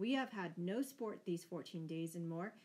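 plain reading voice

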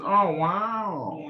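easy, phoned-in celebrity voice, wow drawn out lazily. Showing an easy go-to impression, an Owen Wilson impression. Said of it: "Bad at my job is just going to Owen Wilson".

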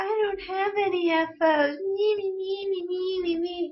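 very high, slow, long drawn-out whine. Imitating the other speaker's complaint from last week: imitating someone whining. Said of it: "You were whining last week".

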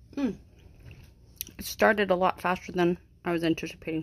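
speaking with full mouth. Just starting a video, speaker talks with a gummy in mouth. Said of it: "I have a gummy in my mouth".

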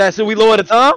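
loud, high-pitched call.

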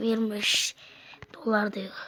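soft, voiceless whisper.

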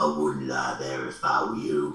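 deepest possible voice, dropped very low. Retelling a voice from the darkness by the water fountain, imitating a very deep voice. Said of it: "The deepest voice I've ever heard".

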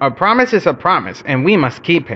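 plain reading voice

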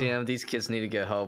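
plain

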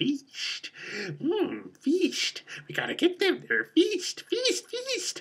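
very high-pitched creepy-crawly movie spider voice. Talking about a movie, imitating how its spiders talk, in a movie spider voice. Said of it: "they talk like this in the movie".

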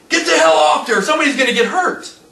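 mock urgent screaming. Retelling a landowner ordering his buddies off the tractors: imitating a scream. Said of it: "The landowner screams at his buddies".

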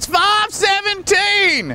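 yelled much too loud at very high pitch. Calling out the time to passers-by: yelling the time too loud. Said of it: "some people get mad 'cause I yell too loud".

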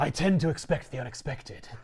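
breathy, whispered caped vigilante hero voice. Retelling a joke where one hero is asked to imitate Batman, Batman impression. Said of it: "Do your impression of Batman".

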